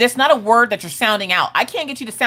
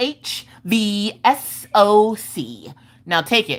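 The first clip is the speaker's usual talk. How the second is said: mock super-sassy, very slow, letters drawn out. Retelling an eye test where Maggie reads letters: imitating Maggie being sassy. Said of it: "being super sassy".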